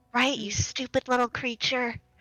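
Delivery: said adoringly, affectionate, not mean. Speaking in character to a snake: said adoringly, not mean. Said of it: "she says it really adoringly, though, not, like, in a mean tone".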